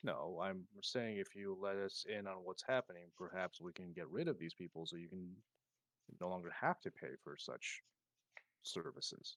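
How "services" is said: heavy stress on the word 'services'. Replying to Robert about his shop, stress on 'services'. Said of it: "I emphasize the word services".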